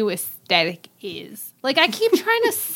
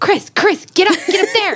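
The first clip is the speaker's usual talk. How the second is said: funny little voice, much higher and slower; 9 semitones higher, 6 dB louder than usual. Retelling a remark called out in the crowd, in a funny little voice. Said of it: "in the funniest little voice goes".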